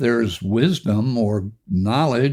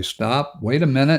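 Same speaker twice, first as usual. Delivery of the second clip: normal talking voice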